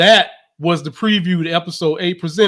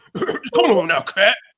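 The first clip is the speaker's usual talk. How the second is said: put-on deep, raspy voice; 3 semitones higher than usual. Showing how to do the impression, voice made deep: deep coughing Shannon Sharpe voice. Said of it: "try to make his voice deep and act like he was coughing".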